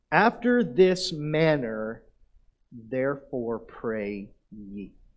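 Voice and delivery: slow, drawn-out reading.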